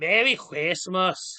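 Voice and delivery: poor, clumsy put-on Scottish accent. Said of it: "It's in Scottish".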